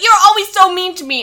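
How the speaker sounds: put-on high, loud little-kid voice. Retelling Jason complaining that Cheryl is mean: imitating Jason like a little kid. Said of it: "he talks like a little kid".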